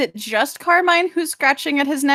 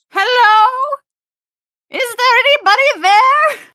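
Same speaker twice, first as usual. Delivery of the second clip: very high, very drawn-out, slow call; 10 semitones higher, 5 dB louder than usual. Calling into empty streets as a character: calling out in character. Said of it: "Your voice echoes down these streets".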